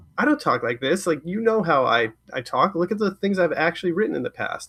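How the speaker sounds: ordinary talk, nothing marked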